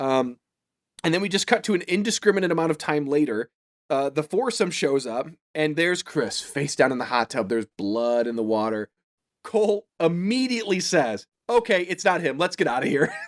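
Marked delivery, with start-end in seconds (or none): 11.5-13.1 put-on dry, flat, expressionless deadpan delivery. Recapping a story, retelling one character's line, retelling a deadpan line. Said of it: "almost as deadpan as that".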